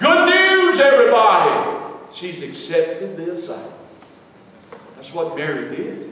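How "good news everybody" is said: big, boisterous, grand angelic herald proclamation voice. Imagining an angel entering the gates of glory to herald news, in a big boisterous angelic voice. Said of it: "heralding with this big, angelic, boisterous voice".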